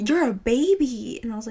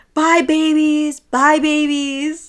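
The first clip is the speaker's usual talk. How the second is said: put-on woman's scream, higher and louder; 5 semitones higher, 8 dB louder than usual. Retelling how a woman kept taunting them while waiting for Uber: imitating a woman screaming. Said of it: "She just kept screaming that we were babies".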